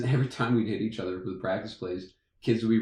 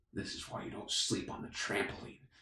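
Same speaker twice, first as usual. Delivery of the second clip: barely audible, very quiet, breathy whisper; 11 dB quieter than usual. Retelling a coach leaning close to a grunting kid, retelling a whisper. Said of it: "and he whispers".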